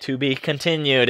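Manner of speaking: ordinary talk, nothing marked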